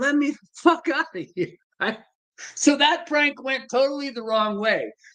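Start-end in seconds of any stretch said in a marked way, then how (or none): 0.0-1.6 put-on loud, desperate hollering. Telling a prank story, imitating the trapped man, retelling a yell. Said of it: "he's yelling".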